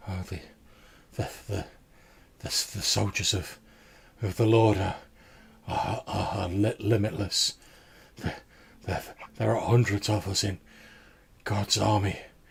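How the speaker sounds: mock-dreamy slurred voice. Describing a man in a weird state answering questions, imitating slurred, dreamy speech. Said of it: "his voice is quite slurred and a bit sort of dreamy".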